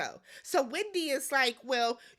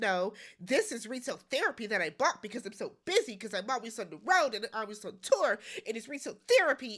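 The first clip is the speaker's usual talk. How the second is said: play-acted, cutting, very snarky sarcastic tone; 4 semitones lower than usual. Criticizing a purchase, speaker quotes Candace's reply: mock-snarky Candace. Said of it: "very snarkily".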